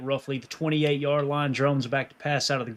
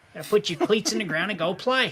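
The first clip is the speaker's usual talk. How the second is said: really whiny voice, pitched up high; 6 semitones higher than usual. Mimicking how he talks, quoting his line in a whiny Brian Kelly voice. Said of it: "that real real whiny voice".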